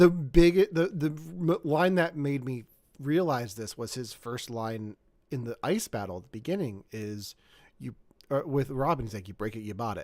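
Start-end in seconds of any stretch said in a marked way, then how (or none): 9.3-10.0 put-on smug, self-assured, cocky tone. Quoting Batman's first line in the ice battle: cocky George Clooney Batman line. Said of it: "he just comes off such, so cocky".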